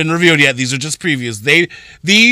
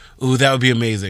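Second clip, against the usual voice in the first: ordinary delivery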